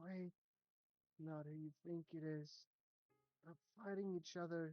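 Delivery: faint, distant, raspy echoing voice. Game master voicing a voice the players hear; faint raspy echoing voice. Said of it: "a very faint, raspy, almost like an echo voice".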